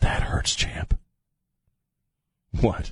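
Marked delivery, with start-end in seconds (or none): 0.0-1.0 creepy politician-style voice. Joking about low approval ratings: creepy Joe Biden voice. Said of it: "Using my creepy Joe Biden voice".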